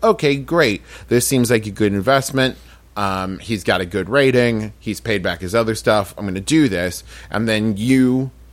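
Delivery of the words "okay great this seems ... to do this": ordinary delivery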